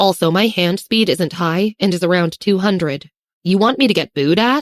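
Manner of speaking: ordinary talk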